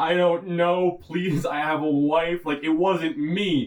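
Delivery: high, slow, tearful, crying, begging plea. Retelling a detained man's plea to the agent: imitating someone crying. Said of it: "And he's crying".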